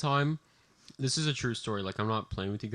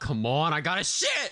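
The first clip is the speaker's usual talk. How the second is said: play-acted exasperated, fed-up yell; 5 semitones higher than usual. Telling a story about finding the restroom stalls full, retelling a yell. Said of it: "I literally yelled out".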